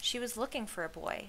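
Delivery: ordinary delivery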